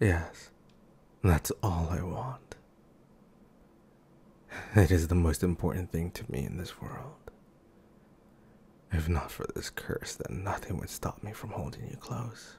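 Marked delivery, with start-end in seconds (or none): 0.0-7.1 bashful, self-conscious, sheepish, embarrassed tone. Character answers what they would ask for most, sheepish.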